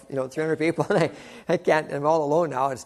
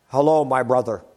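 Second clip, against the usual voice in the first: put-on spoken in a Polish accent; 3 semitones lower, 5 dB louder than usual. As the fellowship speaker greeting someone in the lunch lineup, Brother Kostick's Polish accent. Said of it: "in his Polish accent".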